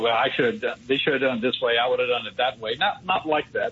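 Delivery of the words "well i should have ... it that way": usual speaking voice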